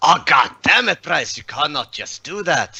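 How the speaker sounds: high, furious, angry screaming outburst. Voicing a character on his turn as he is screaming at another character. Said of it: "he will scream at Bryce".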